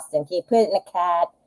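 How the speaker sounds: soft put-on Boston accent. A mother retells talking to her kids in a Boston accent. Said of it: "and then I'd be Boston".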